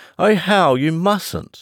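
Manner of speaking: very high, drawn-out, pleading, protesting outcry. As a man gets ready to lash out with the whip, a woman crying out in protest.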